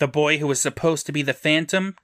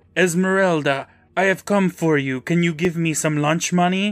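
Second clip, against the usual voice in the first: put-on Eastern European accent; 3 semitones higher than usual. Recapping an episode, quoting the boy who grabbed a girl, in a fake Eastern European accent. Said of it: "says in a fake Eastern European accent".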